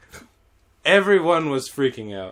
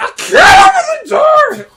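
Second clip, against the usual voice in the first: put-on very high, loud, sobbing child-like crying shout. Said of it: "every time she's like".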